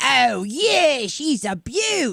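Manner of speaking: very slow put-on Australian accent. Describing learning Australian from TV: put-on stereotypical Australian accent. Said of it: "I don't wanna go around going".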